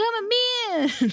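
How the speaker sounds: very high, shrill yelling. Retelling a reality show scene, imitating John still yelling: imitating someone yelling. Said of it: "'cause he's still yelling".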